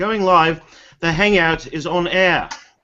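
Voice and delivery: put-on British accent. Opening a live Hangout as a joke: put-on British accent. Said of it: "I'm gonna do this with my British accent today".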